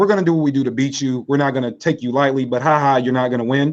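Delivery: ordinary talk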